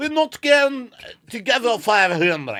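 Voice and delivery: fake German accent, very loud, very high, swooping. Playing a wife refusing a gambler more money: bad put-on German accent. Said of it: "I don't know if that's German".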